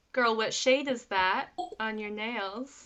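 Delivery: ordinary delivery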